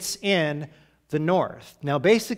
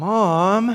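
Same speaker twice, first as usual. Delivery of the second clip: annoyed, exasperated, drawn-out sighing; 4 semitones higher, 4 dB louder than usual. Imagining Jesus answering his mother about the wine, mock-exasperated sigh. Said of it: "with an eye roll and a big sigh".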